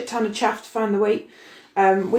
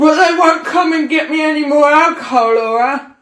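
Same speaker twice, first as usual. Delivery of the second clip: put-on very loud, high-pitched drunken slurring; 6 semitones higher, 8 dB louder than usual. Retelling what the other speaker said while drunk: imitating drunk slurring. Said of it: "slurring at me at the door".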